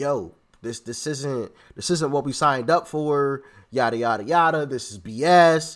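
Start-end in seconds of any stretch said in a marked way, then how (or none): none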